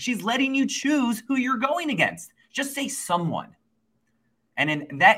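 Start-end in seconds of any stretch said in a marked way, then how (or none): 0.0-3.6 imitated yelling, pitched up. Retelling yelling at the TV during a show: imitating own yelling at TV. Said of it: "I was yelling at my T V".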